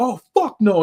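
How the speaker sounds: loud, high, outraged outburst.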